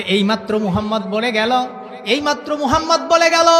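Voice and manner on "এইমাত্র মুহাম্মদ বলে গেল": plain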